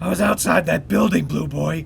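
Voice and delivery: loud, rough, creaky superhero growl. Batman answers Robin's questions about Superman with a Batman growl. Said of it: "(Batman growls)".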